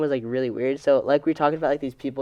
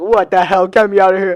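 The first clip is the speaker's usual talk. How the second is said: put-on frightened panic, higher and louder; 6 semitones higher, 9 dB louder than usual. Retelling the reaction after being startled: imitating scared panic. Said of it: "that scared the fuck out of me".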